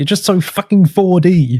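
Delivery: high-pitched, exasperated, blurted outburst. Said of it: "like an exasperated".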